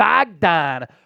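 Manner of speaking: put-on Philadelphia accent. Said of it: "I promise it's the last time I'll do that".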